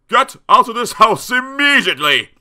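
piercing, shrill, high shout at full volume. A narrator reads a father's words to the alligator: shouted. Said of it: "shouted Mr".

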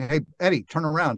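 normal talking voice

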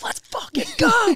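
screaming voice. Retelling cheering when a friend was announced as headliner: retelling a scream. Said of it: "I'm screaming".

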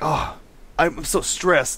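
put-on, slow, high, stressed man's drawn-out complaining. Retelling what a game character said on the phone: imitating a stressed man. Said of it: "And he's like".

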